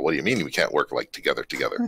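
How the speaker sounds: plain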